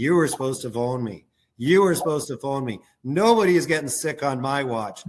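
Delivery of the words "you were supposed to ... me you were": plain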